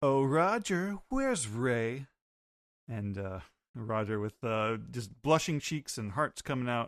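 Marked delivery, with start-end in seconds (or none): 0.0-2.1 put-on slow, sweetly flirty, charming tone. Retelling a comic scene, a character putting on the charm: imitating Jackie putting on the charm. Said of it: "Jackie putting on the charm".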